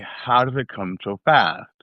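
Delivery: normal talking voice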